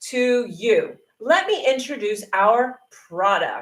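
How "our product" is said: our product said with strong stress. Demonstrating word emphasis when introducing a product: stress on 'our product'. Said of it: "you give emphasis to that word".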